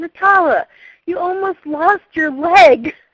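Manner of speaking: mock very loud, drawn-out, tearful sobbing speech. Retelling what she said to the speaker while sobbing, imitating her sobbing. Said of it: "And she sobs".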